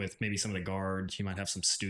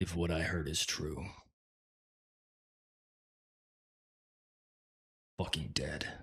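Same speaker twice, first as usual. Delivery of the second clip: low growl, close up in the ear; 3 semitones lower than usual. The narrator voices a man who steps in close, growling into your ear. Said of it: "growls into your ear and says".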